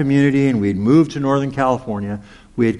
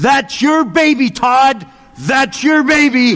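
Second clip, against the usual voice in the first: very loud, very high, shrill cry; 13 semitones higher, 6 dB louder than usual. Retelling how a cashier pointed at her granddaughter's picture, in a very loud voice. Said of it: "speak in a very loud voice".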